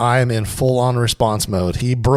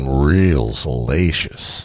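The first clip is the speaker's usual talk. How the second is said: low bass rumble in a deep voice; 11 semitones lower than usual. Repeating a phrase after the other says they never had one, deep voice. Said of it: "You like that little bass rumble?".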